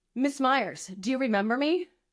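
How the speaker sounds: put-on swaggering, cocky, full-of-himself tone. Retelling what the arresting cop said at the door: imitating a cocky cop. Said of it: "he's such a cocky, you know, ass that he's like".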